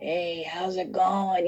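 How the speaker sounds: very slow, drawn-out, every word stretched. Retelling a greeting heard over the intercom: Jack Nicholson voice. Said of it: "in his Jack Nicholson voice".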